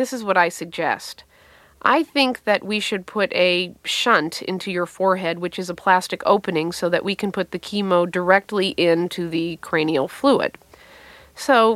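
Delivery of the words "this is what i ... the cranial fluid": ordinary talk, nothing marked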